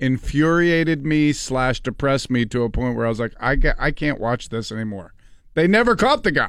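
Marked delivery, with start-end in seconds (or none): none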